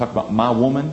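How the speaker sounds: put-on American vernacular accent. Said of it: "with the Afro-American accent".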